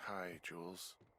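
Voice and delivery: weary, worn-out, sleepy-sounding voice. Woken up and called on the radio, the character greets the caller in a tired voice. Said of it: "you sound tired".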